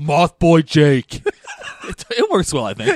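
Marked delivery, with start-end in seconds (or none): 0.0-1.2 sounding like a caveman. Podcast host repeating a nickname they dislike, caveman voice. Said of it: "You sound like a caveman when you say it".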